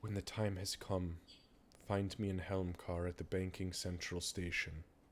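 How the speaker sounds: hushed half-whisper, barely above air. Voicing a character giving a parting instruction: half-whispering under her breath. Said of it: "she whispers under her breath".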